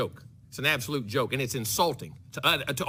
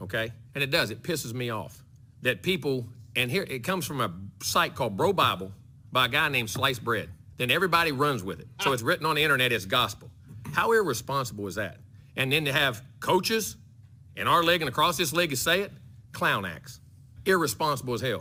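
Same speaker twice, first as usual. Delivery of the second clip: usual speaking voice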